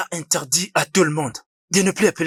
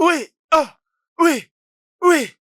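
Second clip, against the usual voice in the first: ecstatic, very high, joyful shouting; 11 semitones higher, 3 dB louder than usual. A man whose marriage proposal was just accepted, shouting with joy. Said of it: "pourquoi tu cries?".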